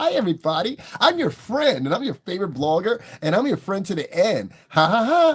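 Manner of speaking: put-on horror-doll voice, high and loud. Mocking how online bloggers talk to their viewers, mocking Chucky-like voice. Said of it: "they talk with a voice like this".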